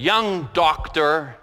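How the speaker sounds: very gruff, brusque, sharp shot-back delivery. A doctor recounting a man's retort after hearing the scan results, imitating a gruff voice. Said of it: "shot back with this very gruff voice".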